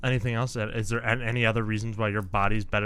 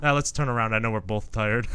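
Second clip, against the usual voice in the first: ordinary delivery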